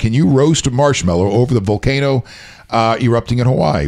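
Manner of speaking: ordinary talk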